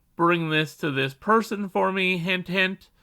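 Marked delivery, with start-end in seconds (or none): none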